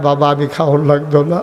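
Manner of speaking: ordinary talk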